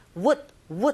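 "would" clipped short, quick and weak.

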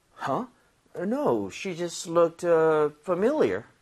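a little startled, slightly surprised, caught off guard. Leading listeners in reading a practice line aloud: slightly surprised. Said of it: "약간 놀라면서".

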